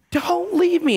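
very high, acted, desperate panic-stricken cry. Retelling how a young girl screamed at them: imitating a panicked scream. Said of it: "She is screaming in complete panic and shock".

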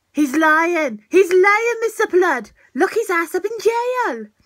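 put-on unintended Welsh accent, slipped out. Playing a character who accuses someone of lying: accidental welsh accent. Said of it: "I didn't mean for that Welsh accent to come out".

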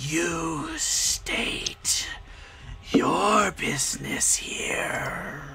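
talking with a sigh. Game master voices a second creature questioning the intruders, talking with a sigh. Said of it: "it talks with a sigh as it says".

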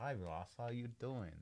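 very quiet, soft, laid-on, very flirtatious voice. Acting out saying hi to Ross, in a mock-flirtatious greeting. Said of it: "In a very flirtatious voice".

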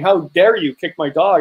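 mock-furious outburst in a woman's voice. Retelling how a dog owner confronted them after the dogs fought: imitating a furious woman. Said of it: "she went nuts on me".

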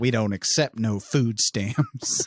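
slow, badly done, put-on Southern drawl. Speaker quotes a line a cashier says that they love, in a bad fake Southern accent. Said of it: "a California person trying to do a Southern accent".

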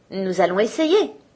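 plain

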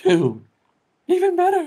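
very high princess voice. Reading a game line aloud: Peach's voice. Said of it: "Peach's voice".

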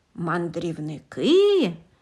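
low, distrustful, drawn-out voice. Narrator reads a character answering a stranger's reply: distrustful drawl. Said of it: "недовірливо протягла Кеп".

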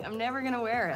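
talking through laughter. Refusing to wear the suit: laughing while talking. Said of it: "Why is she laughing and saying".

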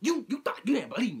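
very loud, high, over-hyped, acted-out overexcited talk. Retelling what a woman on the bus said: imitating someone talking too hyped. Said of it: "like a little too hype".

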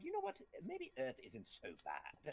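hushed, breathy villain voice. Imagining what Frieza would say about Earth: Frieza voice. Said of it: "Frieza would be like".

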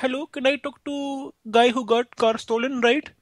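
put-on Indian accent, pitched very high. On a phone call with another man, the speaker plays the indian guy with an indian accent. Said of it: "I can be the Indian guy".

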